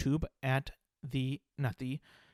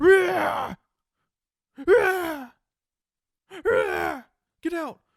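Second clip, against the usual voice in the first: very high, very loud, very slow roaring; 10 dB louder than usual. Retelling a video of a man followed by a puma: imitating a man roaring at a puma. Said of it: "when we roar".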